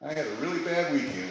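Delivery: put-on scared, frightened young woman's voice. Speaker retells a phone call from a young woman; imitating a scared young woman. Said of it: "A young woman that sounded scared".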